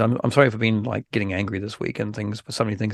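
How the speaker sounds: ordinary delivery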